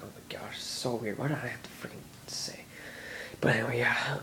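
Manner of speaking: soft, unvoiced, murmured whisper.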